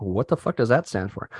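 plain

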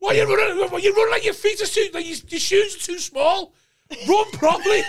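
put-on angry shouting. Retelling standing watching a younger brother play, imitating own angry shouting. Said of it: "The idea of you being so angry you can't even get the words out".

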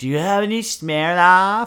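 put-on very high, loud, shrill, dumb drunk party-girl voice. Imitating a loud drunk girl at a college party. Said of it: "the loud drunk girl at a college party".

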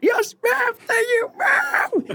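very high, piercing, loud shout. Telling a story about a kid in a food line, the speaker imitates his yelling. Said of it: "keeps yelling like louder and louder".

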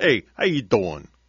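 sort-of Italian accent, attempted. Showing the only line they can do that sort of sounds italian. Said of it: "I can only do one thing that sort of sounds Italian".

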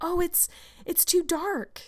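high, exclaiming, long, drawn-out outcry. Anne, asked by Marilla to run over to Mrs. Barry's, cries out. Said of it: "cried Anne".

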